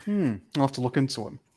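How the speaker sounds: said with sarcasm. Answering another speaker about a comic writer: sarcastic tone. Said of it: "the sarcasm in my voice".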